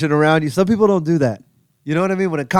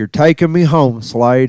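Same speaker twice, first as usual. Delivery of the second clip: put-on Appalachian accent, lower pitch; 4 semitones lower than usual. Retelling a trip to Louisville with Jerry, imitating Jerry's Appalachian voice. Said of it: "It's where that voice comes from. Appalachia".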